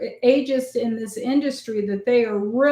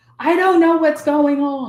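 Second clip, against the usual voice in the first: mock frantic, ranting outburst, freaked-out yelling; 4 semitones higher, 5 dB louder than usual. Retelling how a new hire started yelling at his boss: imitating someone yelling. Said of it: "starts yelling at him".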